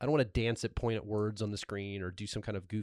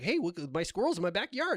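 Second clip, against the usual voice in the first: very high, swooping sing-song pitch; 10 semitones higher, 3 dB louder than usual. Doing the voice when asked: imitating Mark Rober. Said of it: "Do the voice, [name]. Do the voice".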